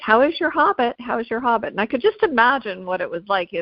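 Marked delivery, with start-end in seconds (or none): 0.0-1.7 mock taunting, much higher pitch. Quoting the people who regularly mocked him, retelling a mocking taunt. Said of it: "regularly mocked by people saying".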